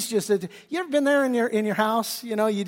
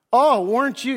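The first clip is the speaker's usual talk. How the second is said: put-on sarcastic tone; 3 dB louder than usual. Retelling a wife mocking her husband's display: imitating Michal's sarcasm. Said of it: "She's just sarcastic as anything".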